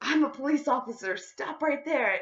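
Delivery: high goofy voice. Recapping an episode scene in the basement, quoting Toby in Toby's funniest voice. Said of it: "In the funniest freaking voice ever".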